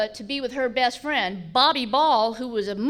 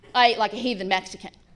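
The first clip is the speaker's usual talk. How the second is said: normal talking voice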